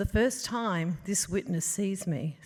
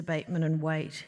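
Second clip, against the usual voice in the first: plain reading voice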